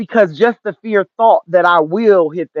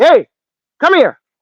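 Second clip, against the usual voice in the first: high, dog-bark-like call in human words; 9 semitones higher, 4 dB louder than usual. Demonstrating how they stop them from doing something, barking in a human tone. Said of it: "I kind of bark, but in a human's tone".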